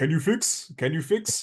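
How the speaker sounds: put-on Middle Eastern accent. Acting out a line in a story, in a fake, vaguely Middle Eastern accent. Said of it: "in some sort of vaguely Middle Eastern accent".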